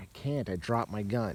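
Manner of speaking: ordinary talk, nothing marked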